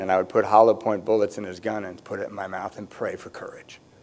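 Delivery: hushed, low whispering.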